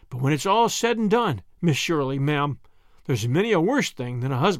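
ordinary delivery

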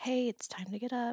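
gentle, soft voice. Describing how they wake others in the morning: acting out speaking gently. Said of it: "I try to first go gently".

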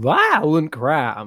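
swooping, sing-song delivery, pitch swinging up and down. Mimicking how the politician in the ad says a phrase: imitating John Kennedy's voice. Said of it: "the way he says violent crime, he says".

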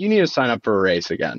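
acted-out, joking, playful tone. Speaker acting out what a woman said to them in bed, retelling a joking remark. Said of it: "she was like jokingly".

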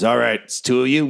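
crafty, sly little gnome voice. Voicing the gnome pulling the iron door open: sly gnome voice. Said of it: "this gnome is, he's a small dude".

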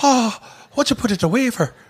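put-on Irish accent, pitched way up. Quoting the movie cop's line in his Irish accent: imitating an Irish accent. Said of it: "but with that accent".

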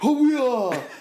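springy over-the-top voice. Imitating how a Geordie PE teacher would sound: springy Jim Carrey impression. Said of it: "'Cause he'd be springy, and he'd be all over the place".

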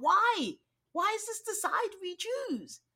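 sounding angry. Retelling own reaction to a reality show scene: retelling own angry reaction. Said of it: "And I just get so angry".

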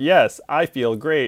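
slow, mechanical robot voice. Imagining a robot copy of oneself answering check-in questions, in a robot voice. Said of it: "a robot voice of me being like".

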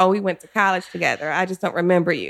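normal talking voice

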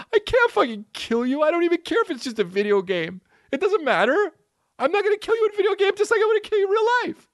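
mock very high-pitched voice, crying hard, sobbing. Retelling her refusal to kill his character in a video game: imitating someone crying hard. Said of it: "Crying hard".

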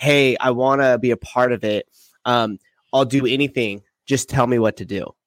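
ordinary talk, nothing marked

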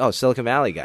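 ordinary talk

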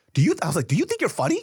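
acted angry voice. Recounting confronting an annoying man at a table, retelling an angry retort. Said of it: "and I'm pissed".

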